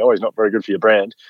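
put-on joking manner. Quoting what the kinder teacher said to them about the boy: retelling a joking remark. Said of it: "very jokingly".

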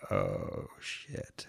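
very hushed whisper, sinking realization. Recounting sitting silently through someone's nonstop monologue, retelling a quiet murmur. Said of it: "sitting there quiet and going".

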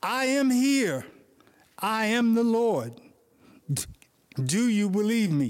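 grand, majestic voice, proclaiming with full majesty. Telling a joke, answering the dangling man as God, in a majestic God voice. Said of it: "God said in His majestic voice".

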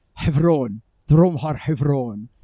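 put-on strong Arabic accent. Retelling a man in the car answering where he is from, very Arabic-sounding accent. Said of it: "in a very Arabic-sounding accent".

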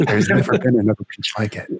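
mock, calm, asmr-style whisper. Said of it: "whispering into the microphone".

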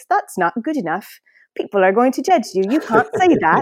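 put-on British accent, high and loud. Speaker imitates the perfectionist voice in her head, in a British voice. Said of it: "Except she sounded more like this".

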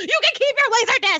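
play-acted, very high, shrieking screamed outburst. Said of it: "I'm screaming".

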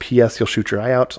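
usual speaking voice

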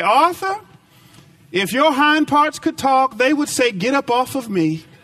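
just the sweetest, nicest high honeyed tone. Retelling a wife's reply to her husband: imitating a sweet, nice tone. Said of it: "Nadine said in just the sweetest way".

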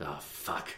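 breathy, whispered muttering under the breath. Imitating the character's muttered curse: Geralt muttering under breath. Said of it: "under his breath".

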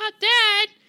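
put-on shrieking baby voice, very high and very loud. Imitating a young actor's character calling out to his dad: imitating a baby voice. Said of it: "such a baby voice".

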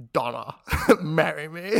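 put-on suave British voice. Doing a requested impression of James Bond as Pierce Brosnan. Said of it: "Pierce Brosnan".

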